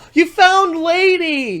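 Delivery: excited mock gushing, high, loud and slow.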